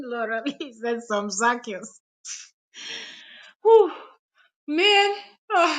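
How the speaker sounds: talking through laughter. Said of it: "I can't stop laughing".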